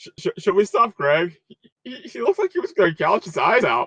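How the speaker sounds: stifled laughter while talking. Retelling someone asking whether to stop: retelling a stifled chuckle. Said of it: "He says as he's trying to stifle a chuckle".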